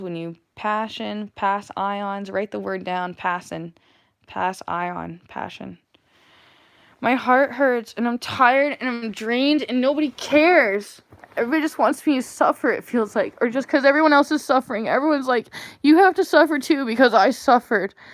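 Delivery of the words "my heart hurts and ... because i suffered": hurt, upset, high whiny voice. Speaking to an audience, later apologizing for it: whiny voice. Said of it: "Excuse my whiny voice".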